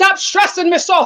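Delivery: put-on botched Irish accent. Quoting a step-grandmother's saying, slipping into a botched Irish or Scottish accent. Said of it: "Was that an Irish or Scottish accent?".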